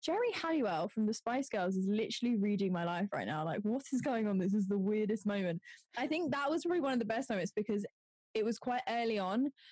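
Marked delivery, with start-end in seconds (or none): none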